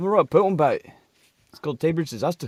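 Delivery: put-on Liverpool accent. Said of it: "you just slipped into, like, a fucking Beatles accent".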